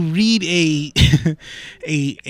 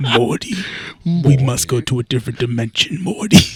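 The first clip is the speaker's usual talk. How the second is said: voice dropped down deep; 4 semitones lower than usual. Joking about recasting a cartoon voice, doing a deep Rick voice. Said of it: "Just have Rick as that deep voice".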